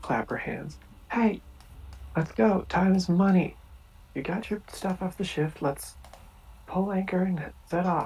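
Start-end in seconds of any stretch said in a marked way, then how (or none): 1.1-8.1 high-pitched, loud calling out. [name] claps her hands and calls the others to set off: [name] calling out. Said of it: "[name] is going to call out".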